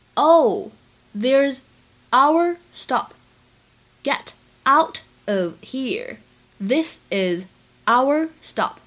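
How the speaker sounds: slow, drawn-out reading with linked words.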